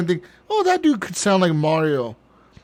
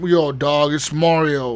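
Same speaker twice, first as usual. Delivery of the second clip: put-on slangy American voice, lower; 4 semitones lower than usual. Imagining an Americanized version of a cartoon hero: American Mario voice. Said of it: "This be some American ass".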